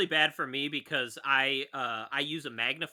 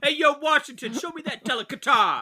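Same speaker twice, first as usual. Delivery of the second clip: loud, very high, swooping put-on New York accent; 11 semitones higher, 7 dB louder than usual. Joking about Washington undoing his frock, calling out to him in a New York accent. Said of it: "It's definitely a New York accent".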